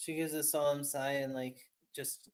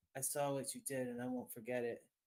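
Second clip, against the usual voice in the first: voice brought down a touch; 5 dB quieter than usual. Game master voicing a character speaking to a player's character, lowered voice. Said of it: "she lowers her voice a little".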